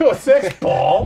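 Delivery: confrontational voice. Repeating the question to a colleague, laughing: put-on confrontational. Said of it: "you adopt that voice whenever you look".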